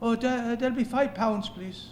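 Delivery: slight put-on Irish accent. Retelling a ticket seller asking a man for the entry fee, little Irish accent. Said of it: "in his little Irish accent".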